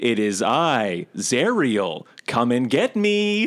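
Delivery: heavenly angelic voice, swooping and sing-song. Describing the scene, the speaker voices the creature speaking through an angelic voice. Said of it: "Through like her angelic voice".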